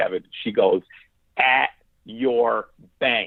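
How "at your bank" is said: the firmest of voices, stern. Speaker retells what a woman said through the wall to Kevin: retelling a firm voice. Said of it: "in the most firm of voice".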